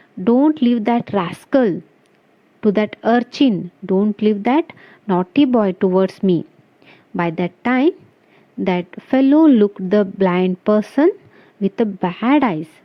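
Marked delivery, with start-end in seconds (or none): none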